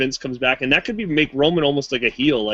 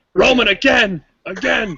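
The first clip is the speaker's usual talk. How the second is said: loud, high-pitched yelling; 8 semitones higher, 4 dB louder than usual. Retelling a wrestler yelling during a chair attack: imitating Triple H yelling. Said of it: "you hear Triple H yelling".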